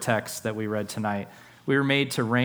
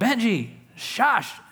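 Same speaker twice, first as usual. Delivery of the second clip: mock shout, very high-pitched; 10 semitones higher than usual. Speaker retells stepping in when their two dogs fought, retelling their own yell. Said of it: "I intervened and I yelled".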